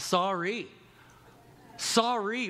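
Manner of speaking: insincere sorry, stress on the last syllable. Showing how people give a fake apology: stress on sorry's last syllable. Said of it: "Whenever we emphasize the last syllable".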